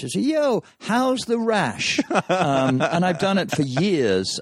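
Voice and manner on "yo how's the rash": very loud, very high, drawn-out shout. Demonstrating calling out to someone you know in a bar, very loud voice. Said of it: "in a very loud voice".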